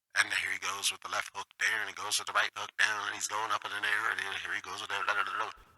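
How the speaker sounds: blow-by-blow radio announcer commentary delivery. Explaining a planned feature, the speaker demos radio-style fight commentary. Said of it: "like it literally would sound like a radio".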